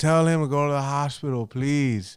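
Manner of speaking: earnest, begging, pleading tone. Retelling how the speaker's grandma spoke to his mom, imitating pleading. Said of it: "my grandma's pleading to my mom".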